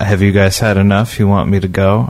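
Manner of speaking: ordinary talk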